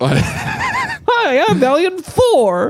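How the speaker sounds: very high, swooping, squeaky, sing-song cartoon alien voice. Describing a ventriloquist's puppet to the other speaker, doing the Valiant Thor puppet voice. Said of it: "he does a dumb voice too".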